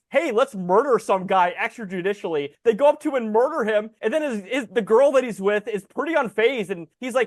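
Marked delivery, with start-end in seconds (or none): none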